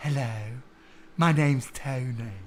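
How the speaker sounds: male voice put on to sound effeminate and lady-like. Speaker listing men whose voices sound ladylike, doing a Tony Blair impression. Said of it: "Tony Blair's another one".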